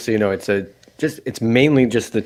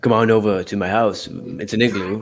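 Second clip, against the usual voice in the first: put-on penguin accent. Asked to do more of a joke accent, the speaker plays a penguin: put-on Antarctic penguin accent. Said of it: "Can we hear more from it, please?".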